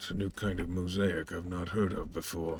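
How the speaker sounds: quiet mumble under breath. A character stitching a wounded player's cuts responds, muttered under his breath. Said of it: "just under his breath responding to you".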